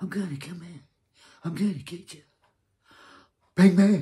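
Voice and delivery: very loud, barking tough-guy voice at full blast. Complaining about a TV show, the speaker shows how the Penguin should talk: mocking tough-guy Penguin impression. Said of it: "He might as well talk like".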